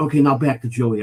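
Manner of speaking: put-on muttering under breath. Retelling what someone secretly said, imitating him muttering under his breath. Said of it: "under his breath".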